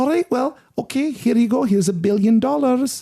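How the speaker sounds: put-on Northampton accent with very high voice. Acting out a quoted line in a story: put-on Northampton accent. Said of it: "this is a bit of a Northampton accent".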